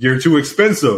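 normal talking voice

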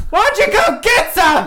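yelling as loud as possible. Calling down dark stairs toward unseen strangers: yelling as loud as possible. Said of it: "I just yell as loud as I can".

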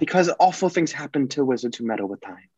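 put-on British accent. Discussing time travel in the films, a fan quotes Hermione, Hermione British accent impression. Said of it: "my version of a the British accent quote".

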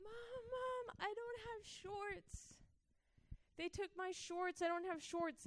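mock very high, soft, tearful crying child's whine. Retelling a little boy running up to complain: imitating a crying child. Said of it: "he comes running to me crying".

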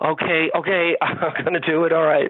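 put-on anguished, reluctant, slow, agonized delivery. Retelling a customer agreeing to buy: imitating someone agonizing. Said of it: "he's saying okay, but he's agonizing".

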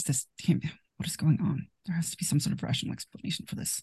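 muttering under breath. A player voices her character looking around at the walls, muttering under her breath. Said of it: "kind of muttering like".

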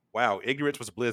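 ordinary talk

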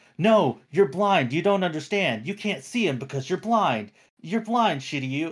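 put-on insistent, nagging tone with shouting. Retelling how a character kept berating his blind friend: imitating Seiya shouting. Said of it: "he kept shouting at him".

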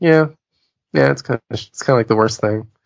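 put-on, shrugging, unbothered voice. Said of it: "Like, shrug".

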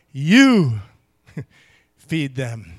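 strong, heavy emphasis landing on "you". Explaining where the emphasis falls in a Greek reply, strong stress on you. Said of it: "the emphasis is on the word you".

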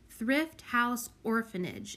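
ordinary delivery, nothing marked

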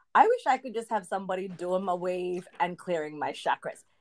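ordinary talk, nothing marked

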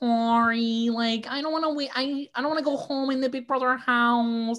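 put-on high-pitched Midwestern accent, one word drawn out. Mocking a Big Brother houseguest from the Midwest, doing a Nicole Franzl impression. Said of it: "who talks like this".

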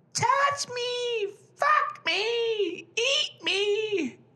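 very high, very slow banshee wail, "me" drawn out. Imitating a partner in bed, in a mocking banshee voice. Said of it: "in this banshee voice".

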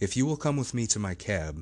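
usual speaking voice

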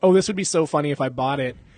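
ordinary talk, nothing marked

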